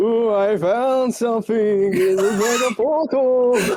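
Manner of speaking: obnoxious, irritating, annoying spooky ghost voice. Playing a character going back to the group, in an obnoxious ghost voice. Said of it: "a very obnoxious ghost voice".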